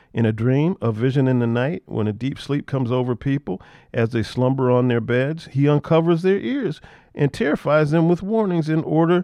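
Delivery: ordinary delivery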